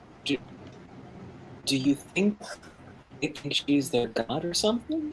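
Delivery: very soft, barely audible whispered murmur. Whispering in character to the other two about staring gerblins: whispering. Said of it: "I kinda whisper to the other two".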